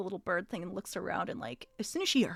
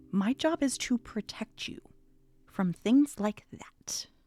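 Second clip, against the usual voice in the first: hushed whisper; 3 semitones higher, 5 dB louder than usual. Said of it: "whispering, like, hushed".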